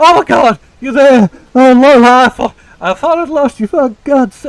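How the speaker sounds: terrified, high, very loud panicked outburst. Narrator voicing Eugene crashing through the undergrowth to find the group, panicked and terrified. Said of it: "abject like panic and terror on his face".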